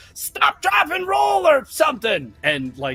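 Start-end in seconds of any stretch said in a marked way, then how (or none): 0.2-1.5 very high-pitched goblin cries and yelling. Narrating the burning goblins, voicing cries from the side: goblins yelling. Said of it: "voices from the side yelling like".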